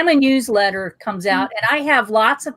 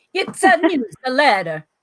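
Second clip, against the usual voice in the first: put-on Italian accent. Quoting what Chris Cariello says, imitating Chris Cariello with an Italian accent. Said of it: "I'm trying to say it with an Italian accent".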